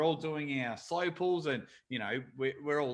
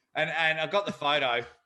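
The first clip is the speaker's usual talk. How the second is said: usual speaking voice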